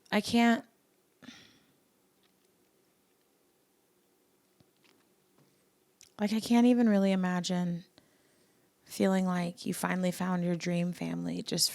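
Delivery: teary, speaking while crying. Discussing a family torn apart by betrayal, speaking tearfully. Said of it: "I'm crying".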